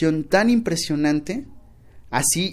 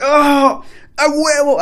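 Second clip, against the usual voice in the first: very high, drawn-out, slow whoop of joy; 11 semitones higher, 8 dB louder than usual. Recounting opening an old payment receipt, retelling a joyful shout. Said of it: "inmediatamente grité así como que".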